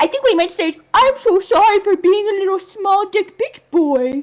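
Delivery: puppet-style character voice. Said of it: "like a muppet".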